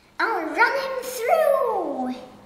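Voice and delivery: loud, high-pitched, excited battle-cry shouting. Narrating a story, the Duke draws a sword from his walking stick; shouted. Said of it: "he shouted".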